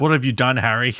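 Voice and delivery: imitated British accent. Quoting a line from a game trailer: British accent. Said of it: "In a British accent".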